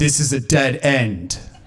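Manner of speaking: furious, angry yell. Retelling chasing a thief into a cul-de-sac: retelling own angry yell. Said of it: "And I yelled out".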